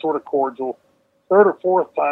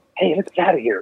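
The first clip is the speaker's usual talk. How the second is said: put-on small, little boy voice; 2 semitones higher than usual. Retelling being pushed against a wall during a bar fight: Big Boss Man little boy voice. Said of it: "a little boy voice".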